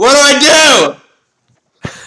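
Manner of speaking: very high, very loud, slow, drawn-out shout. Voicing an archer in the middle of a fight: shouting in character. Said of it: "he shouts".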